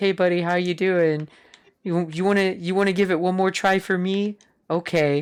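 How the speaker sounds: easygoing, breezy, casual character voice. Retelling how Ross popped in to encourage another player: imitating Ross. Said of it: "was it Ross pops in, he's like".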